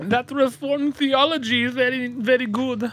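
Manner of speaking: terrible put-on German accent. Imitating some Germans in a joke, with a terrible German accent. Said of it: "That's a terrible German accent".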